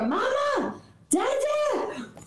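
put-on high, screaming child's voice. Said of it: "he screams at the door".

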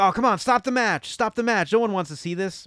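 high yelling. Retelling a movie scene from ringside, imitating someone yelling. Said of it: "Foley is on the side of the ring yelling".

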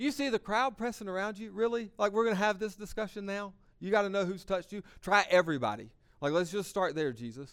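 high, scornful, incredulous, mocking sarcasm. Retelling what the disciples say back to Jesus, acting out a mocking tone. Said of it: "almost imagine is a mocking tone".

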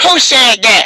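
mock elderly woman voice. Retelling a school prank, quoting the assistant principal turning around; imitating Miss Gush. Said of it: "This is how she talked".

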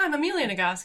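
words thick, talking through a chewed mouthful. Introducing herself on the podcast, talking through a mouthful of chocolate. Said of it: "She said through a mouthful of chocolate".

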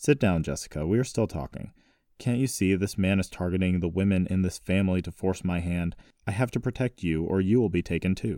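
ordinary delivery

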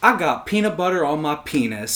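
normal talking voice

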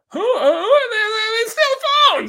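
very high, fast, rushed, loud voice. Imagining an actor delivering a line: Charlie Day impression. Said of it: "that was a beautiful Charlie Day impression".

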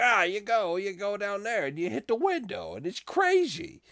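put-on old-cartoon magpie chatter, very high, swooping. Imitating the magpies from old cartoons: cartoon magpie voice. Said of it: "like the crows from, ... the magpies from old cartoons".

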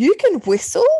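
put-on stunned, surprised outburst at very high pitch. Acting out a woman on the phone hearing you whistle for your dog, imitating someone shocked and surprised. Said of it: "exclaimed in quite a shocked and surprised tone".

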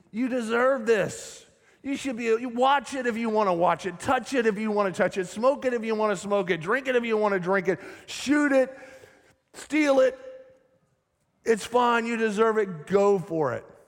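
put-on sinister, tempting devil voice. Acting out the voice of sin tempting the listener, in a devil voice. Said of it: "That was my best devil voice right there".

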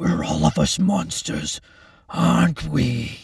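nasty, leering, horrible taunting voice. A man, after retching, addresses the doctor before grabbing a scalpel: leering, horrible voice. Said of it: "He leered in a horrible voice".

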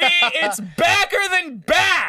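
excited screaming. Cheering about New York to another speaker: screaming excitedly. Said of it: "stop screaming".

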